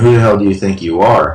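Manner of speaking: usual speaking voice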